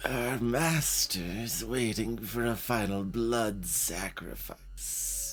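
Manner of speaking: rasping, gravelly voice. Narrating to players, the aunt speaks from behind a priest's mask; raspy voice. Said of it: "You hear a raspy voice, your aunt's voice".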